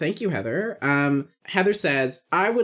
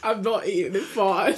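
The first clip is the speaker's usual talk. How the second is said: put-on British accent; 2 semitones higher than usual. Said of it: "Can you make it British?".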